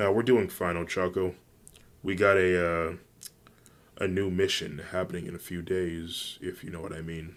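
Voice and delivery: ordinary delivery, nothing marked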